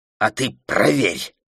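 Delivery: short, spat-out words. A woman answers a girl's challenge to meet one on one; spat out. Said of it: "выплюнула Роуз".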